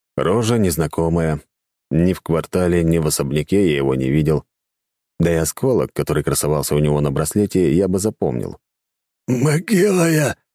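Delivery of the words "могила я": high, strained groan. A man spitting blood answers the narrator's question, groaning. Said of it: "простонал мужик".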